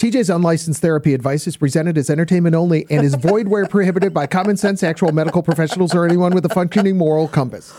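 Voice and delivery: very fast rattled-off gabble. Reading a new disclaimer from the lawyers, rattling off fine print fast. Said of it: "you did it really fast, so nobody knows what you're saying".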